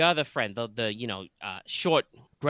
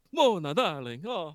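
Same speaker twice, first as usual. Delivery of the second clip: slipping into a pitched-up vampire voice; 6 semitones higher than usual. Playing a pawn store owner greeting his returning relative; accidental vampire-like voice. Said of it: "I don't know why I suddenly went quite so vampire".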